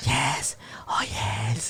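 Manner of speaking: creepy, breathy whisper. Explaining the laughter by imitating Karen: imitating Karen's creepy yes. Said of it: "Karen sounds creepy every time she goes".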